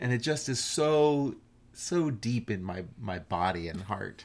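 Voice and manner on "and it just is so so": usual speaking voice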